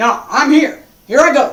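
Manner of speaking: firm, forceful, unyielding, loud, determined voice. Contrasting Tai Chi with Xingyi, voicing Xingyi's attitude: determined forceful voice. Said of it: "you can hear that in my voice".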